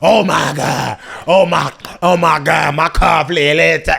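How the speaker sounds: wildly exaggerated gushing, shrill, very high, loud. Retelling how kids quoted the joke back, imitating them over the top. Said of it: "they just over the top".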